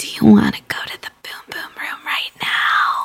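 imitated quiet whisper. Retelling what she whispered to Kenny, leaning in: retelling a whisper. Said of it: "she leans in and whispers".

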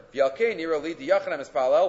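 ordinary delivery

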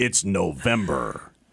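official, authoritative announcer voice. Demonstrating a line for the other speaker, in an NFL Films announcer voice. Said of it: "It's like NFL films or something".

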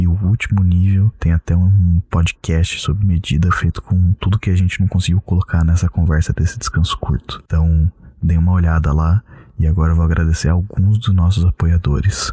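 quiet hushed voice. Greeting listeners late at night, speaking softly. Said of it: "tô falando baixinho assim".

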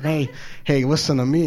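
plain

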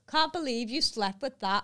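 mocking, loud and high. Speaker retells the flatmate's remark at a tube station poster, retelling a loud remark. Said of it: "he just went led loudly".

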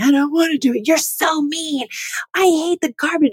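put-on very high, whiny, complaining kid voice. Retelling how the daughter complained about taking out the garbage: imitating a daughter complaining. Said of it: "And she's complaining".

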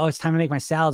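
ordinary talk, nothing marked

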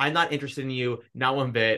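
ordinary talk

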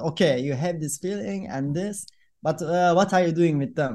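normal talking voice

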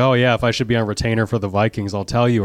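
plain

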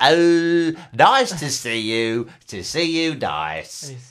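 loud, very slow, every word drawn out. Showing how Bruce Forsyth talks: Bruce Forsyth impression. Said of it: "he talks like this".

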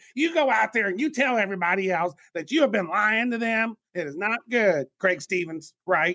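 put-on Southern mother accent. Speaker imagines what a man's mom would say to him, southern mom voice. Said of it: "Is he from the South? Because I feel like his mama is".

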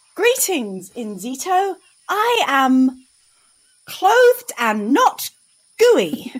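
eager, enthusiastic, loud with swooping pitch. A character greets enzito, enthusiastic.

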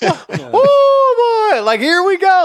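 excited shouting. Retelling watching a big sack in the basement: imitating own excited yelling. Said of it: "my kids and my wife could hear me yelling".

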